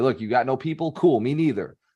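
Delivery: ordinary delivery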